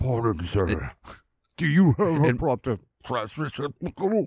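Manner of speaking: birdlike dinosaur character voice. Acting out a dinosaur asking someone for a trash can, in a dinosaur bird voice. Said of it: "You got to do it in like a dinosaur bird voice".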